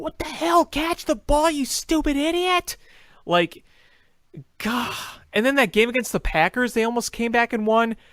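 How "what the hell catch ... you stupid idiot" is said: mock exasperated, high-pitched, furious screaming. Retelling screaming at a player who dropped a catch: imitating own screaming. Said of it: "I was screaming at Bellamy".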